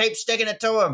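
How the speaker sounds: mimicked rough Australian man. Imitating a Newcastle bogan in his ute praising the videos: imitating a Newcastle bogan. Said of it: "regular Newcastle bogan punt in his Commodore Ute being like".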